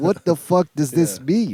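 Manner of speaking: plain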